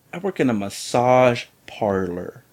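ordinary talk, nothing marked

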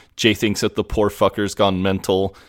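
ordinary delivery

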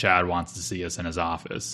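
normal talking voice

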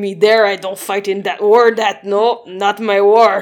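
put-on Quebec accent. Mocking how Quebec people talk about war: imitating a Quebec accent. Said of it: "Quebec is like".

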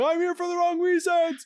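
mock shrill, high, loud shouted screaming. Describing a man yelling from the balcony: imitating someone screaming. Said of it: "He's just screaming".

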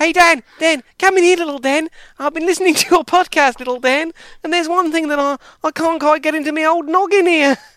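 put-on very high-pitched, very loud Australian accent. Acting out what the person who messaged Dan was saying, imitating Craig in an Australian accent. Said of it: "doing an Australian accent for Craig from Sussex".

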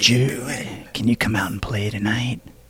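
eerie, low, creepy ghost voice. Retelling harassing phone calls in a movie: imitating a creepy caller voice. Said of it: "from a creepy voice".

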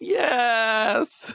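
suppressed inner scream, very high and strained. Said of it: "he screams internally, he goes".

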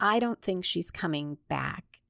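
ordinary delivery

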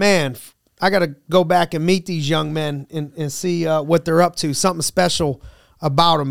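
normal talking voice

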